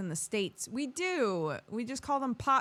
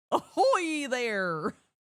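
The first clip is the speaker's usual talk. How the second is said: loud cartoon dog voice, badly done; 4 semitones higher, 5 dB louder than usual. Checking everything works, asked to say ahoy in a Goofy voice. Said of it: "in a Goofy voice".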